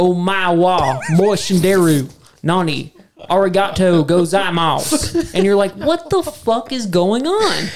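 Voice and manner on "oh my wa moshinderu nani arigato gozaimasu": put-on Japanese spoken in a country accent, much slower. Describing an actor in a movie, mimicking his Japanese in a country accent. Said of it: "he starts speaking Japanese in a country accent".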